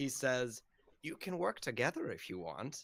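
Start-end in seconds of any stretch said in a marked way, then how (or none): 1.0-2.8 woman's voice, animated and swooping. Voicing a character grabbing someone's arm, in the woman's voice. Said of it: "he says in the woman's voice that has been talking".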